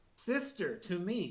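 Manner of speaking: vicious, hateful scream. Voicing a hateful villain calling to his sister: screaming. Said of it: "And he screams".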